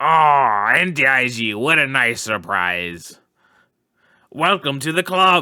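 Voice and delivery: put-on gruff comic voice. Voicing a club member who welcomes a newcomer: Danny DeVito voice. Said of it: "it felt more Danny DeVito".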